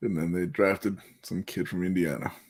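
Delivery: low, quiet, let-down, disappointed voice. Discussing the Lakers drafting a player, disappointed. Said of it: "you sound so disappointed".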